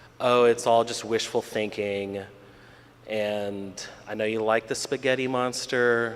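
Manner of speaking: normal talking voice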